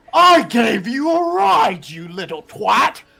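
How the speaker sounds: angry aristocratic voice. Voicing Lord Baccaris yelling at the man in red. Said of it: "Lord Baccaris leans from his table and stands up and goes".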